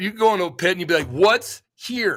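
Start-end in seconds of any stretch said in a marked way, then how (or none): 1.1-2.2 mock trading-floor caller voice, big-order tone. Retelling a broker walking into the trading pit, in that broker's tone. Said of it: "When I say it with that tone".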